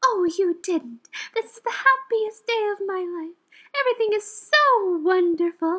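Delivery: high, lifted cartoon princess voice. Acting out a scene with three fairies, doing a Rose voice impression. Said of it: "こういう声優のモノマネとかするの大好きなんで".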